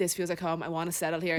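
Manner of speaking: ordinary talk, nothing marked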